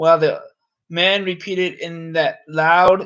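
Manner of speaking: ordinary delivery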